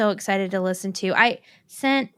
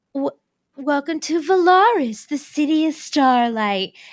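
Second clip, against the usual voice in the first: put-on grand, stagey, theatrical old Broadway lady voice; 3 semitones higher than usual. Recalling a soundbite from Mist and Fury, in an old lady on Broadway voice. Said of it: "it sounds like an old lady on Broadway".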